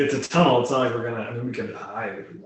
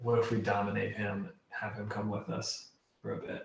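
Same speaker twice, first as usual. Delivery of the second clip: discreet, quiet, hushed aside; 9 dB quieter than usual. A player's character looks around the group and proposes a plan, speaking quietly. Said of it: "and like quietly say".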